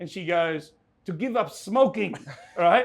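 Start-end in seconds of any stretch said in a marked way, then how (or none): 1.1-2.2 put-on heavy, laid-on Eastern European accent, pitched up. Retelling a chat, the speaker quotes a woman's answer in a thick eastern european accent. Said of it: "thick, thick Eastern European accent".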